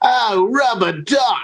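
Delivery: put-on slow Australian accent. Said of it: "that pelican was Australian".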